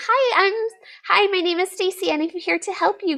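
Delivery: very high, overly sweet and polite sugary voice. Explaining tone of voice in English, using a sweet, polite, uppity voice. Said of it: "a very sweet, happy, polite, uppity ... customer service voice".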